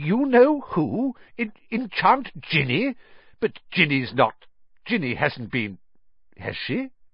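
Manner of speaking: stunned, dumbfounded disbelief, broken-off phrases. Narrator reads a character's reply to startling news in a stunned voice. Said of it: "in a stunned voice".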